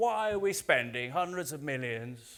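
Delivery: put-on sceptical interviewer voice. Retelling a TV interview, imitating a sceptical interviewer: bad Jeremy Paxman impression. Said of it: "that's not a very good impression".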